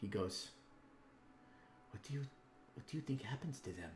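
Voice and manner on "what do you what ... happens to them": hushed, close, soft, slightly high half-whisper. Voicing Pilfert half-whispering a question to a player: half-whispering. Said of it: "and he whispers to you".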